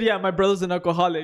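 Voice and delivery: solemn, completely serious, flat delivery. Retelling what he said at the party table: imitating a serious voice. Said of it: "And in a serious voice".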